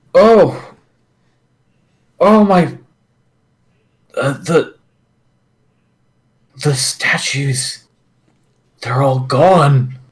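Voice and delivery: high, wobbly, wavering, shaken, distressed voice. Voicing a character who finds the statues are gone: distressed wavering voice. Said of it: "he wavers and wobbles about a little bit".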